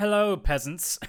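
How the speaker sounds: haughty, snooty, high-pitched aristocrat voice. Joking that Chris will show up wearing a monocle, imitating Chris as a monocled aristocrat. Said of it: "show up with like a monocle and just be like".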